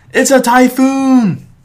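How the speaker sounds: shrill, very high, very loud shrieking scream. Recapping a cartoon episode's rain scene, retelling Maisie Umbrella's scream. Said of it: "she screams".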